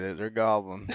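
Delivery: low mutter under the breath. Retelling a companion's quiet remark: imitating someone muttering under his breath. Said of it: "This guy's under his breath".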